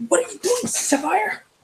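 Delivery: stage whisper, very high pitched. Asking another character in the scene what they are doing: whispering. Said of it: "I'm, like, whispering".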